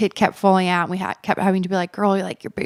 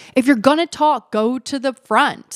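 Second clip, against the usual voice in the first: put-on high, loud yell, projected across distance; 6 semitones higher, 4 dB louder than usual. Recounting a dance floor full of talkers, retelling Jeffrey's yell. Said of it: "Jeffrey literally yelled out".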